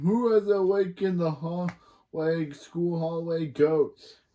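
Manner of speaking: spooky put-on ghost voice. Retelling a story where Chloe haunts the school, in Chloe's ghost voice. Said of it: "goes super ghost and talks like this".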